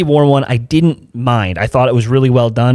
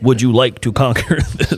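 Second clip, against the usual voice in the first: put-on synthesized computer voice. Retelling an AI voice that irritated someone, the speaker does the Stephen Hawking computer voice. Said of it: "the Stephen Hawking computer voice".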